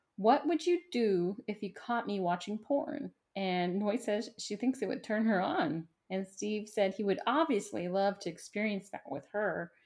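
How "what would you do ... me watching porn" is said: normal talking voice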